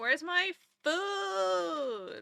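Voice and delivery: very loud bellow with "food" stretched long. Retelling him walking around at the auto feeders: imitating him yelling for food. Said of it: "yelling at the auto feeders".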